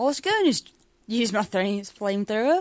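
put-on Australian accent. Channeling 'the Australian' in a group: put-on Australian accent. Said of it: "I got to channel the Australian".

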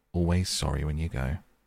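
usual speaking voice

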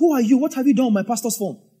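indignant, upset, high, demanding tone. Retelling a phone call where Tega got upset, imitating an upset demand. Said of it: "tega got upset say so".

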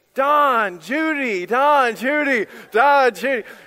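very slow, frantic, high, drawn-out yell. Recounting running through an airport calling for Don and Judy, retelling frantic yelling. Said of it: "so I'm yelling".

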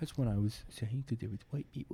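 hushed, very quiet whisper. Retelling how the other speaker said a risque line anyway: imitating a whisper.

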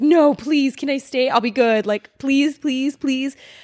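put-on pleading, wheedling, earnest child's begging voice. Retelling begging a mom to stay for the movie: imitating own childhood begging. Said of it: "So I begged her to".

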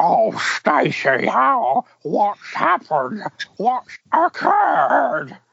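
very high, drawn-out puppet voice with swooping pitch. Showing off the one impression the speaker is good at, Zippy voice. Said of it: "Do you want to know one I'm actually quite good at?".

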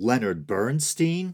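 mock not confident, hesitant, unsure tone. Mimicking a voice that seemed to guess a name, mock-unsure guessing tone. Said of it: "He didn't sound too confident about it, though, did he? He was like, Leonard Bernstein? Like he was taking his best guess".

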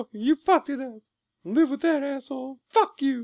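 mock very high-pitched, furious angry tirade. Retelling a movie scene where John C. Reilly goes off on someone: imitating John C. Reilly going off. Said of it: "goes off on him".

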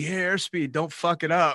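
put-on cheeky, high-pitched, loud teasing yell. Retelling a shout during a team's dive in the plane, imitating Tanya O'Brien's loud yell. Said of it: "she yells out pretty loudly".

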